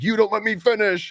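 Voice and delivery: high-pitched, furious put-on scolding yell. Retelling an old wife yelling at her husband in the park: imitating a wife yelling. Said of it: "yelling at the husband".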